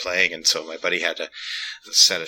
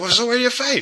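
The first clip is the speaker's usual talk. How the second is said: put-on Glaswegian accent, pitched very high. Retelling what a man at a bar said: imitating a Glaswegian accent. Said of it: "Glasgow is its own unique and crazy when it comes to a Scottish accent".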